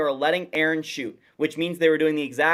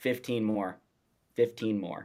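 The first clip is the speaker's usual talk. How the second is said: very low, hushed, under-the-breath muttering; 7 semitones lower, 8 dB quieter than usual. Retelling what was overheard in the locker room: imitating muttering under breath. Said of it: "he's saying under his breath".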